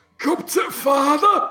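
put-on working-class English accent. Imitating the original undubbed film line: imitating the original English line. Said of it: "you hear the original fucking audio and it's like".

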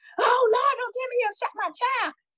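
very high-pitched, loud hollering cry. Retelling a father's reaction to terrible news: imitating someone hollering. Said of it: "he started hollering and things".

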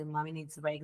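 softly spoken.

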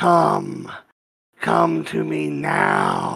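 heavy smoker's voice. A narrated character calls out toward the candy shop, in a heavy smoker's voice. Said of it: "But like way too many cigarettes".

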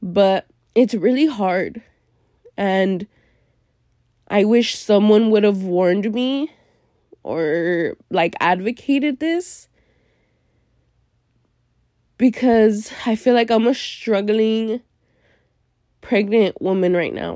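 teary, emotional, crying while talking. Speaker sharing how lost and hard things feel right now, tearful and crying. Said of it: "I have like tears flowing out my eyes".

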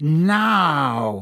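very dangerous, threatening, menacing, drawn-out delivery. Reading a novel, the professor orders a reluctant student: in his most dangerous voice. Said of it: "said Snape in his most dangerous voice".

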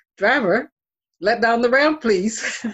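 high, play-acted, commanding, authoritative tone. Showing what the speaker learned to say to a driver, in an authoritative voice. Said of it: "say in an authoritative voice".

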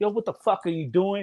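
mock furious, angry, fed-up outburst. Retelling how someone got up after being overshot: imitating someone pissed off. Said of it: "he was pissed".

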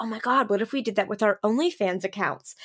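ordinary talk, nothing marked

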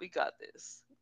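put-on whispered, breathed out in a Polish accent. Retelling how a book character answers about handling things: Bogdan's Polish accent. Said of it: "in his Polish accent".

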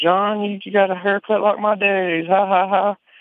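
high-pitched, teasing, mocking little-girl voice. Retelling a little girl teasing a man about his haircut: imitating a little girl teasing. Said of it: "kinda poking at him".

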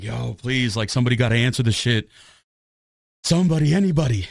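panicky begging tone. Retelling being stuck at 2 a.m. with a dead phone, retelling own panic. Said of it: "i'm like panicking".

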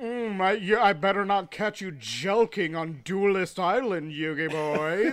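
slow, drawn-out character voice lingering on each word. Quoting a favorite villain while talking about the show: Pegasus impression. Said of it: "He's like".

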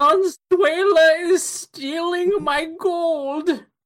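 put-on squeaky, very high old-timer prospector voice. Doing a bit, the speaker slips into a prospector voice. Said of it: "prospector voice".

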